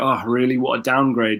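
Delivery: normal talking voice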